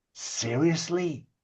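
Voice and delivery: fed-up, exasperated tone. Voicing Chuck turning to a player in disbelief: voicing Chuck. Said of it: "Chuck turns to you and says".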